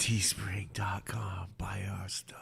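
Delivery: eerie, creepy, slow, drawn-out whisper. Asked to whisper the merch plug creepily, the speaker obliges in a creepy whisper. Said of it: "whisper it creepily".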